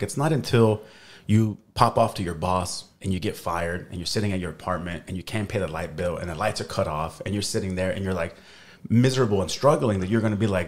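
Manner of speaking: usual speaking voice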